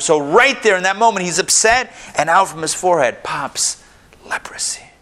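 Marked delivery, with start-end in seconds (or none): 4.2-4.8 hushed, breathless dramatic whisper. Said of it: "Why am I speaking like this?".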